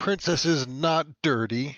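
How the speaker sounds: loud, high shouting. At the game table, a player answers a captive who called his dragon dirty, yelling back. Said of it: "I'm yelling back".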